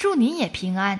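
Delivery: ordinary delivery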